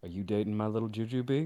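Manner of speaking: play-acted grave, deadly serious, low tone. Retelling how a sassy man asks about someone dating, in a mock-serious tone. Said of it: "In the most serious tone you ever heard this sassy man go".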